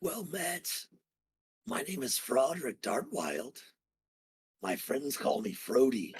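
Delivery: raspy, rasping corpse voice. Game master voicing a corpse greeting the players: raspy Froderick Dartwild voice. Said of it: "in a raspy voice".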